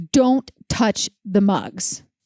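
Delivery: acted, slow, deadly intense delivery. Retelling what a hotel worker said about the mugs: imitating an intense warning. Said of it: "very intensely".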